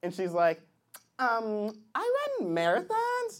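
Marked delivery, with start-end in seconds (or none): 1.2-3.4 put-on swooping, sing-song girl voice.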